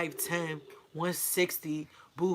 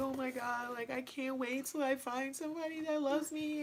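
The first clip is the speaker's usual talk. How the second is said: sobbing, boohoo crying through the words; 9 semitones higher, 6 dB quieter than usual. Retelling own words while crying at a love movie: imitating own boohoo crying. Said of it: "so I'm boohoo crying, and I'm saying".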